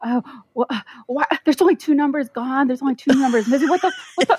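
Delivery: mock frantic, stumbling, high, rattled-off stressed panic. Retelling how a stressed test-taker reacted during the test: imitating someone super stressed. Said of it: "he was super stressed the whole time".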